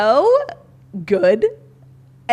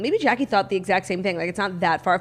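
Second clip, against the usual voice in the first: ordinary talk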